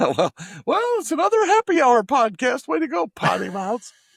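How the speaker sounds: very high, bad, put-on woman voice. Voicing the speaker's mom on the podcast: bad impression of her. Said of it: "that's a really bad impression of my mom".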